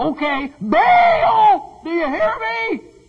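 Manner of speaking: put-on very high, stretched-out screaming cry. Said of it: "Scream louder".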